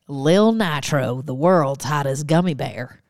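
fake put-on Texan accent. Telling a Texas story, the speaker reads out a line in a put-on Texan accent. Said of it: "I'm going to do it with an accent".

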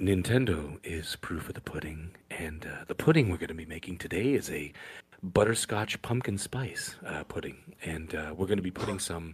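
very soft, very quiet whispery asmr tone. Answering a request from the other speaker, in ASMR voice. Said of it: "in your A S M R, A S M R voice?".

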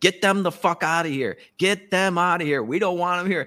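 put-on angry screaming. Describing a clip, the speaker acts out the crowd at her, imitating people screaming. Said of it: "they are screaming at her".

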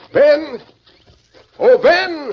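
loud, high-pitched, far-carrying calling yell. Scouting near a lean-to by a cliff, calling for someone, yelling. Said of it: "You can stop yelling at that shack".

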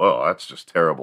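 ordinary delivery

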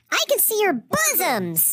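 very high-pitched, squeaky, weird little monster voice. Mimicking Kyle's mom during a recap: imitating Kyle's mom. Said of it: "I try to mimic Kyle's mom".

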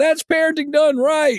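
play-acted, very high shouted yell. Telling a story, quoting another guy in the section yelling out: retelling another guy's yell. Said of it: "another guy yells out".

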